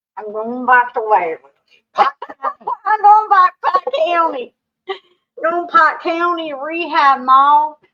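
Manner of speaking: slow, giggling, laughing mock voice.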